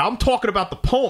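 high, sharp, snappy tone.

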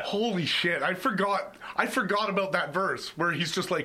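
plain

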